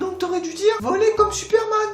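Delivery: put-on very high-pitched big kid's voice.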